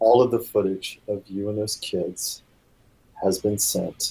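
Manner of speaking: hushed whisper. Voicing a character whispering in a dance partner's ear: whispering. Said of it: "Angela whispers in his ears".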